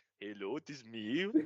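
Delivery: slow, put-on, fake European accent. Doing their Greta voice: Greta's fake European accent. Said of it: "unquote European accent".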